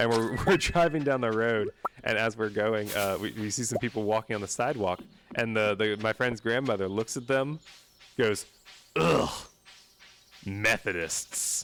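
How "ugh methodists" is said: play-acted horrified grunt of pure disgust. Retelling a friend's grandmother seeing people on the sidewalk, mock-disgusted scoff. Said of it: "I've never heard such disgust in my life".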